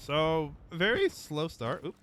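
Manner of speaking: voice breaking mid-phrase, jumping up high. Speaker commenting on gameplay, voice cracking. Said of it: "my voice cracked for some reason".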